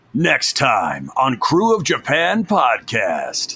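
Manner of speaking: swooping anime narrator voice. Asked to record a preview for the podcast's new intro, doing a Dragon Ball Z narrator voice. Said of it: "could you say in your Dragon Ball Z narrator voice".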